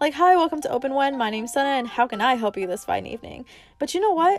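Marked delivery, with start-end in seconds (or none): 0.1-3.5 put-on, acted customer service voice. Co-host shows the voice she caught herself slipping into, customer service voice. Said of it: "I caught myself slipping into my customer service voice".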